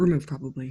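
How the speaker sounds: low mutter under the breath, half to oneself. Retelling how a show guest muttered to herself: imitating Ashley muttering under her breath. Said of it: "she would mutter under her breath".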